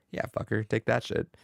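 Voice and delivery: ordinary talk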